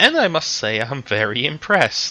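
sweet, smiling tone. Game master voicing a woman who has just shown an inquisitorial rosette, smiling sweetly. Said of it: "And she just smiles sweetly".

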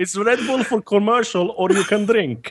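put-on very high voice with thick Finnish accent. Speaker recalling a funny red bull bit: heavy finnish accent. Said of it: "on this heavy Finnish accent".

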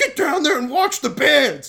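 shrill, very high, very loud, bossy, huffy yelling. Retelling how the guys running the show yelled at everybody, imitating organizers yelling weirdly. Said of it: "yelling at everybody in a weird way".

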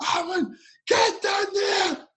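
shrill, high, urgent screamed voice, coach-style. Retelling a coach's order to chase the ball: imitating the coach screaming. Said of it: "the coach is, like, screaming at me".

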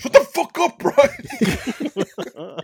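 put-on very high, very slow, drawn-out angry outburst. Retelling a cook's reaction to a joke: imitating someone losing it angrily. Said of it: "Mike loses his shit".

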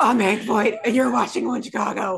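low, deep character voice dropped down. Doing a one-time impression for the others: Hank Voight impression. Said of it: "my first and only Hank Voight impression".

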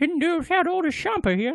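very high, near-toothless, one-toothed man voice. Retelling a scene about a man with one tooth: one-toothed man voice. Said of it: "I used to be able to do that voice".

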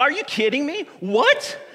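acted, high-pitched, stoked, excited disbelief exclaiming. Retelling their reaction to reading something, acting out stoked disbelief. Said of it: "walked around the room like".

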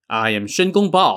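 plain

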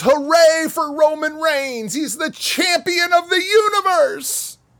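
very high, top-of-lungs screaming cheer. Imagining fans cheering for a champion, mock screaming fan cheer. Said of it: "screaming at the top of their lungs".

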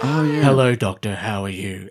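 husky, very low, rasping voice. Imitating a character's voice before a patch takes it away: husky voice. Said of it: "takes away her husky voice Because she goes from like".

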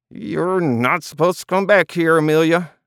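unconvincing gruffness. Reading a story, Doug answers Amelia as she comes behind the counter, growling unconvincingly. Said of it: "Doug growled unconvincingly while trying to strangle a smile".

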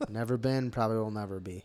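beaten, defeated, resigned tone. On a podcast, answering the other hosts, the speaker sounds defeated. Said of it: "You sound so defeated".

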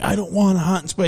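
angry, high-pitched ranting outburst. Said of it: "he's just going off on this lady".

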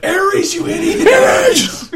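loud, laughing yell.

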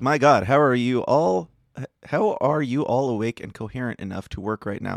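plain

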